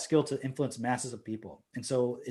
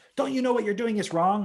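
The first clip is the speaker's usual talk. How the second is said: play-acted high-pitched yelling, protester style; 8 semitones higher, 3 dB louder than usual. Mocking protesters who yell at those in power: imitating someone yelling. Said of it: "yelling at them like".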